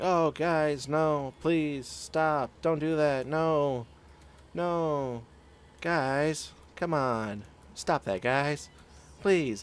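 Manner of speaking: very slow, high, drawn-out pleading. Describing a fight, imitating someone in the background, imitating a pleading bystander. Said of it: "are you gonna have that voice".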